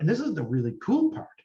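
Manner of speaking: normal talking voice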